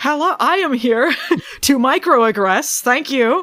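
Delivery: put-on high, evil corporate voice. Joining in on retelling a corporate character's greeting: imitating Lori as an evil Karen. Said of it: "And she goes".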